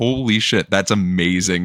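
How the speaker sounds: plain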